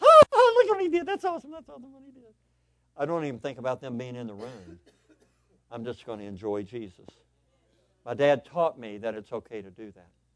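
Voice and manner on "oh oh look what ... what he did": very high, loud, mock impressed gushing. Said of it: "so everybody goes".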